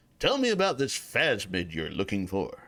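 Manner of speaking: low, cool, laid-back seventies cop voice. Restarting a question in an improvised scene: Peter Graves 70s cool voice. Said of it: "I didn't use my cop voice".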